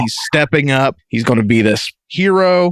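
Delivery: normal talking voice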